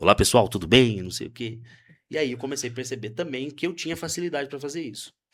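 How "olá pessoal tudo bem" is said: put-on microphone voice, thickened, deep and loud. Retelling speaking into a microphone while setting up speakers: imitating own put-on deepened voice. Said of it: "engrossar a voz".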